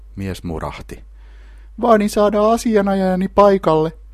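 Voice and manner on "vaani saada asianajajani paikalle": squeaky, very high, loud piping voice. Felipe, seated before a bald interrogator, makes a demand: squeaking. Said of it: "Felipe piipitti".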